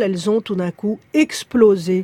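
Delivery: ordinary talk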